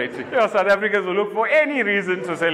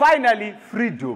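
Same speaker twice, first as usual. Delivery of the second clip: ordinary talk, nothing marked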